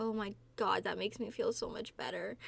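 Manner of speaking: plain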